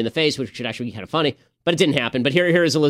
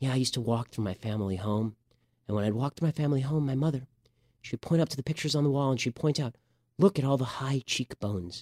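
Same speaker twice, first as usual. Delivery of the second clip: very quiet, softened, hushed voice; 9 dB quieter than usual. Imitating Elizabeth Warren telling a family story: soft Elizabeth Warren voice. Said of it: "Elizabeth Warren goes very soft".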